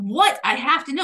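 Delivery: ordinary delivery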